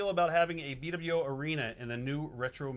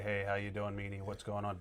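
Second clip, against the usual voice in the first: mock monotone, much lower and quieter; 6 semitones lower, 5 dB quieter than usual. Showing how they make fun of his voice, Tommy Dreamer's low-key monotone. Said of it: "we make fun of his voice on here".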